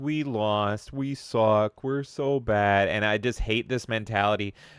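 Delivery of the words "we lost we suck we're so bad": very slow, pitiful, drawn-out self-pitying moping. Mocking a console maker for putting itself down: mock pathetic Xbox voice. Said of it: "they're pathetic because they keep being like".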